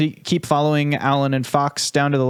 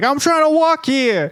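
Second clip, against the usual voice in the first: shrill, very high yelling; 12 semitones higher, 3 dB louder than usual. Narrating a game scene, voicing people yelling at a character: mock yelling passerby. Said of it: "people yelling at him".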